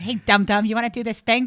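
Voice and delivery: casual teasing New York manner. Retelling how a comic called with a job offer: imitating Robert Kelly. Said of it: "that's how they all talk to each other in New York".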